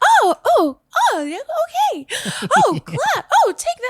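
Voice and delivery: very high, bouncy, bubbly sing-song heroine voice. Showing how main female characters in JRPGs talk: bubbly, up-and-down heroine voice. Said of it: "very much bubbly, up and down".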